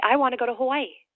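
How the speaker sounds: light smiling voice. Showing how to pause, smile and say your goal, light smiling voice. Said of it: "you pause and put a smile on your face and you say".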